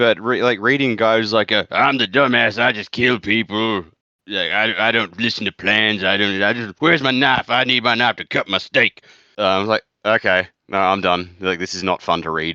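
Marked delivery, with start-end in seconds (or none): 1.5-9.0 put-on Texan accent. Complaining about a book character, mocking guys like him: Texan impersonation. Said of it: "That was a good Texan impersonation there".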